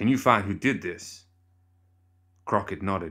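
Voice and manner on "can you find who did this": through gritted teeth, jaw clenched. Narrator voicing Cornelius's question to Crockett, through gritted teeth. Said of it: "Through gritted teeth".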